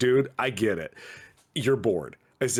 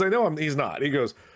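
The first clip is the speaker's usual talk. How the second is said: ordinary talk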